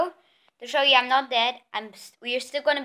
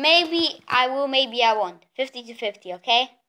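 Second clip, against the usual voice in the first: normal talking voice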